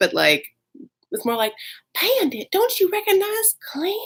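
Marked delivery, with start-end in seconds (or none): 2.0-4.0 airy, breathy, very high-pitched Southern lady voice. Retelling what a woman said, redoing it more breathily: breathy Southern woman impression. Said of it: "it's a little more breathy than that".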